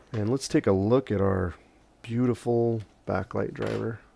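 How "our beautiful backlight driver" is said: heavily sarcastic, dripping tone. Showing a backlight driver that is not beautiful at all, with heavy sarcasm. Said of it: "I say that with heavy sarcasm".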